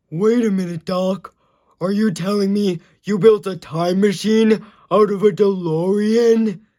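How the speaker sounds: loud, goofy cartoon starfish voice. Comedian running through impressions, doing Patrick Star auditioning for Back to the Future. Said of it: "my impression of Patrick Starr".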